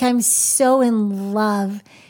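theatrical, dramatic, very slow and drawn-out delivery. Showing how to say a phrase about love: dramatic. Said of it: "I just like to go a little bit dramatic".

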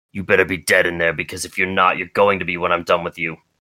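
angry, threatening tone. Narrating a story, a man at Timmy's cell threatens whoever is inside: angry threat. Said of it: "He eyes you down angrily".

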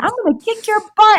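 very high, shrill screaming yell. Retelling yelling at a man grabbing her friend's purse, retelling her own yell. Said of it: "I'm yelling".

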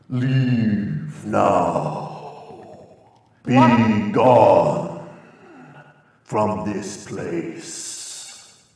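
reverberating, very drawn-out, very slow echoing voice. Voicing the same presence speaking to the group again, booming voice. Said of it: "this booming".

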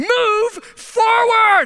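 shrill, very high scream. Retelling airport staff at the curb: imitating airport staff screaming. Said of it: "they're screaming and blowing their whistle".

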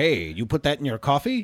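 ordinary delivery

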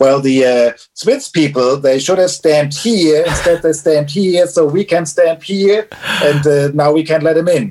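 fake, badly done German accent. Quoting the man who explained the problem: bad German accent. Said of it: "this was bad German accent".

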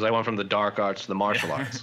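ordinary talk, nothing marked

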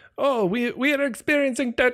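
put-on bad Jamaican accent, way up high. Describing the Florida ride where the crab comes over, bad Jamaican Sebastian voice. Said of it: "I'm a terrible Jamaican".

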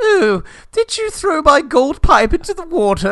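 high, loud, very posh voice, pitched way up. Retelling a scene, the speaker quotes an angel-like woman in a really posh voice. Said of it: "in a really posh voice, she's like".

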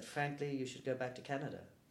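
ordinary delivery

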